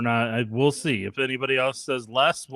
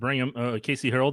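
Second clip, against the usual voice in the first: ordinary talk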